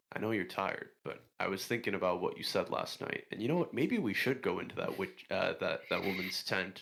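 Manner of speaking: confiding private-aside stage whisper. Whispering in character to a tired companion about a tent: whispering in character. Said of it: "I'll kinda whisper to Haderach".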